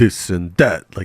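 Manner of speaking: put-on Italian accent. Showing how someone sometimes sounds: Vaush Italian accent impression. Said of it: "talks with, like, an Italian accent".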